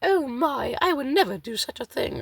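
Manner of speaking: badly done, very high put-on character voice. Guessing how a fella would refuse, imitating a fella's voice. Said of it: "I can't do that voice very well".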